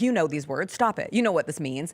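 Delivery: plain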